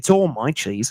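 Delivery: put-on Australian accent. Joking around in a group conversation, in an Australian accent. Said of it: "Is that Australian?".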